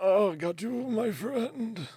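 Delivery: put-on very old satyr voice, very high, shrill, very loud. Narrating a scene, the speaker voices an elderly satyr coming up behind: very old satyr voice. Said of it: "very old, elderly satyr".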